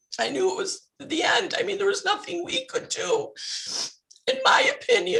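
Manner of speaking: crying while talking. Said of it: "No, you're fine".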